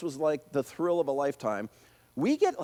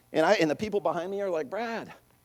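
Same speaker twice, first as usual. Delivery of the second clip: normal talking voice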